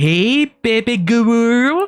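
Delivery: cute, cutesy uwu-style voice. Someone redeems the uwu voice, so the line comes in cutesy uwu voice. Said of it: "So in uwu voice".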